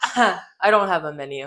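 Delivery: mock loud, smug, laughing-in-your-face tone. Retelling a drive-thru worker's answer, imitating a smug laughing reply. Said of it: "laughing in my face, like, smug".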